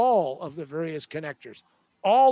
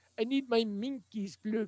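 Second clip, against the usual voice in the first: poor, unconvincing fake French accent; 4 semitones higher, 8 dB quieter than usual. Imagining how somebody with a French accent would say it: bad fake French accent. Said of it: "imagine somebody with a French accent saying".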